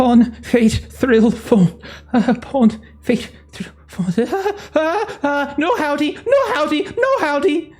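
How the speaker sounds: very high, garbled babbling. Voicing Doctor Holloway babbling in a corner: Doctor Holloway babbling. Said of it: "it sounds like Doctor Holloway's voice".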